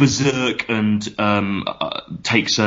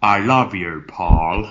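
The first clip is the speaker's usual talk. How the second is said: deliberate, slow, drawn-out movie-star voice. Doing an actor's line from a film: Sean Connery impression. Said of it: "here's Sean Connery then".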